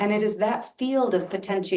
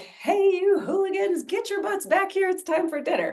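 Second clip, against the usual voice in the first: very high, full-lung carrying holler; 12 semitones higher than usual. Explaining how hollering began, the speaker is imitating a mother hollering. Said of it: "and as loud as she can".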